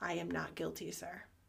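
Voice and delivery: very quiet, calm, low, soft voice. Speaker recounts a woman asked to offer a plea, retelling a calm, soft voice. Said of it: "super calm, soft voice".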